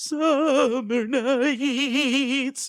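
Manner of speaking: very high, loud turkey-like wobble, "nights" stretched. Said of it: "my best [name] impression".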